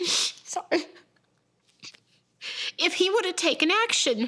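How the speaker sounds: sobbing while speaking. A mother talks about her daughter who died, sobbing.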